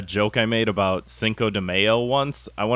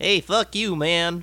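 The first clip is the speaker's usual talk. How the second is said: put-on high-pitched cartoon kid voice; 8 semitones higher than usual. Imagining a voice actor getting to voice Bart Simpson: Bart Simpson impression. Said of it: "It's a dead-on impression".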